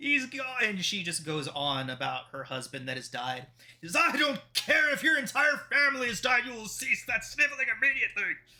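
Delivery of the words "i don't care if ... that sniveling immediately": shrill, high-pitched, enraged, furious yell. Voicing the burgomaster scolding a sobbing woman: angry shouting. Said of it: "about to pass out with anger".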